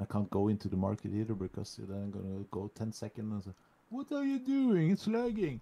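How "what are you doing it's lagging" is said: uncanny put-on voice, loud and very high. Imitating the other speaker complaining about lag: impression of the other speaker. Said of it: "that was uncanny, that impression".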